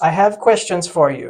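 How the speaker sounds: weird, very loud put-on Eastern European accent. Retelling an actor's buddy interviewing him on set: weird eastern european voice. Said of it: "does this weird little Eastern European voice".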